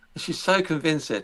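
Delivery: normal talking voice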